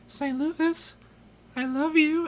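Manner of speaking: very high-pitched, soft, slow delivery. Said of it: "so she doesn't talk very loud".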